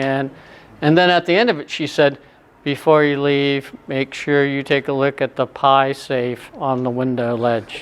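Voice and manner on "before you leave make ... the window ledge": put-on flat, monotone delivery. Quoting the woman showing Doctor Johnson's library, imitating a monotone voice. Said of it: "it was very monotone".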